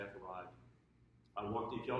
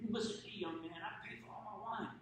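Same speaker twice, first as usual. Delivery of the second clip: put-on high, stern, firm Italian accent. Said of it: "Very stern Italian accent".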